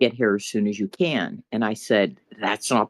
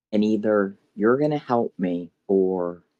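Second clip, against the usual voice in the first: put-on sobbing, tearful voice. Recounting what she told him after finally getting hold of him, retelling a sobbing plea. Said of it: "was sobbing".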